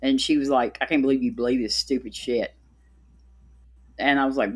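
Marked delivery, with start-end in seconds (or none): 0.8-2.5 put-on mocking tone. Retelling how a daughter reacted to her beliefs: imitating someone mocking. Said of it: "she mocked me".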